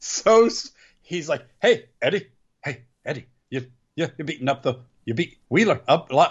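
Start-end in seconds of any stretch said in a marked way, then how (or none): 1.6-6.3 put-on Scottish accent. Recapping a wrestling show, the speaker quotes one wrestler's taunt to eddie: scottish accent. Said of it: "Why is he Scottish?".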